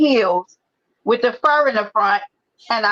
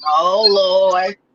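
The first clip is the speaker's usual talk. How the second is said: put-on exasperated voice, lower pitch; 4 semitones lower than usual. Retelling how Lolo reacts: imitating Lolo. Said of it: "the way that Lolo be like".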